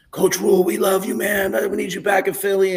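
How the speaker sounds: acted, very high, loud hollering as if from afar. Retelling two guys across the street calling out: imitating someone screaming. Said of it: "two guys across the street started screaming".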